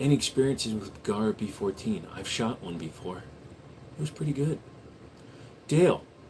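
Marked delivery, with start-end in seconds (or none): 0.0-4.6 soft, hushed ASMR whisper. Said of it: "A S M R for one whole minute".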